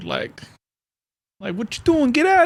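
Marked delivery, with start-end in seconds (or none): 1.5-2.5 heavy, thick New York accent, very high. Imitating a seventy-year-old dude from brooklyn: heavy new york accent. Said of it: "hella New York".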